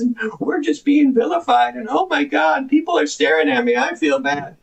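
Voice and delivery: derisive, ridiculing, mocking voice. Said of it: "talks like this".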